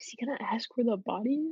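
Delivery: hushed whisper. A character makes a quiet aside to the group, whispering. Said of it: "Judd just kind of whispers".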